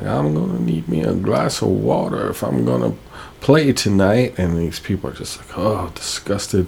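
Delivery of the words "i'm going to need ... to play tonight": put-on sing-song down-home southern American accent. Retelling a drunk man's words to someone, in a southern accent. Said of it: "in a southern accent".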